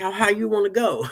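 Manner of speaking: mock riled-up, high, angry shouting. Retelling how he yelled at the computer while buying online, reenacted yell. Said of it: "And I'd even be like".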